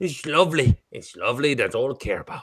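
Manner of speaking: terrible fake Irish accent, soft. Trying an Irish accent again after being told the last one wasn't Irish, bad Irish accent. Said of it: "That is the worst Irish accent I have ever fucking known".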